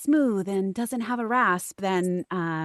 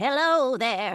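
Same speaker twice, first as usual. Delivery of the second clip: put-on grandmother character voice, pitched a little lower; 4 semitones higher than usual. Explaining how a character's age shapes the voice, demonstrating a grandma voice. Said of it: "or if I'm a grandma".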